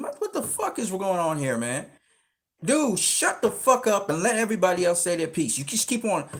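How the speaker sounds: play-acted, loud shouting yell. Retelling yelling down a guy who kept dominating the chat, re-enacted yelling. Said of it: "So I started yelling the guy down".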